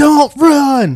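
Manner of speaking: high, slow gym teacher style yelling shout.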